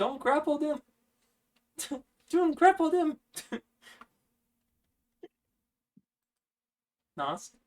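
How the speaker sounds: tiny, squeaky, very high squirrel voice. Voicing a squirrel speaking from a character's pocket to the players; tiny squirrel voice. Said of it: "You hear a very tiny squirrel voice".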